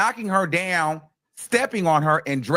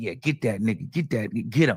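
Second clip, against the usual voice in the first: put-on laughing speech, lower; 7 semitones lower, 4 dB quieter than usual. Retelling how others reacted during the prosecution: imitating people laughing while talking. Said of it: "they was laughing like".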